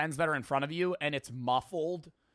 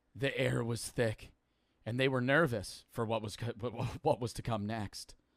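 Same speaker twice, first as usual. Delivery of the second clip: mock monotone narrator voice, lower pitch; 4 semitones lower, 3 dB quieter than usual. Mimicking the narrator explaining a historical event: imitating monotone narrator voice. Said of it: "I love the monotone voice of this guy".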